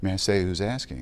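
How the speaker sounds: usual speaking voice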